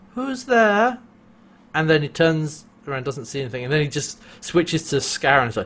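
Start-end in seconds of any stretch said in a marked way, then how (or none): 0.2-1.0 everyday natural voice, pitched high. Describing a film scene, imitating the character before he turns, high-pitched voice. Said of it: "in his regular, I guess, high-pitched voice".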